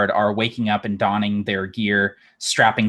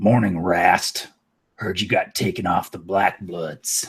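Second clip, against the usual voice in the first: big half-orc character voice; 3 semitones lower than usual. Narrating a scene, voicing a half-orc who bumps into and greets Rast, in a large half-orc voice. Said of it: "that large half orc saunters over".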